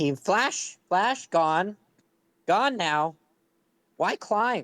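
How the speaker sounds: terse few-word phrasing. A player voicing an odd party member asked to use more words, halting, few-word broken speech. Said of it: "Can you try to use a few more words than that? / I'm gonna start panting and getting stressed and like go deep into thought".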